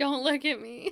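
sudden high, loud panicked yell. Retelling being seen by passing college kids: imitating a panicked yell. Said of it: "I panic and yell".

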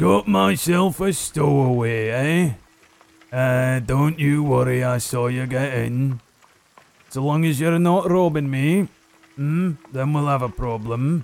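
loud dwarf voice, suddenly speaking up. Game narrator voicing a dwarf calling back to a stowaway, loud dwarf voice. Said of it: "you hear the dwarf suddenly speak up, and it's pretty loud".

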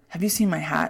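mock-exasperated, put-on exasperated tone. Retelling what he asked while he searched for his hat, mock-exasperated tone. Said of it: "kind of in an exasperated tone".

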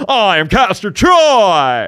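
very high, loud, booming, swooping, "Troy" stretched out. Speaker admits he's not a good impressionist, then does a Nicolas Cage impression. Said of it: "That was my Nicolas Cage".

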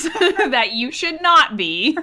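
loud, high-pitched, ranting, scolding mother voice. Speaker addressing listeners, slipping into a ranty mom voice. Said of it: "let me tell you in like a ranty mom voice".

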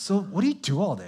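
patronizing, condescending, talking-down tone. Acting out other people's question, mock-condescending question. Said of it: "there are others that are very kind of condescending".

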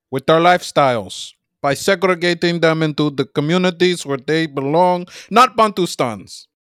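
put-on Swahili-accented English. Speak English in a put-on accent that a listener will correct, a put-on Swahili accent. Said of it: "you are doing more of like a Swahili accent".

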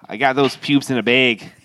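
put-on Chicago accent. Joking about keeping pubes in a bag: chicago accent. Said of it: "you said it like you're from Chi-, Chicago".

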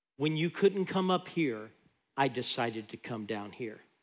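gentle, soft, hushed stage half-whisper. Preaching, voicing God speaking to a woman: imitating God half-whispering. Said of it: "it was God whispering to her".

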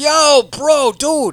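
very loud, very high frat-bro voice. Mimicking the pilots heard in these videos, imitating a frat bro. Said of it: "they sound like just two frat bros".

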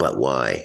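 ordinary talk

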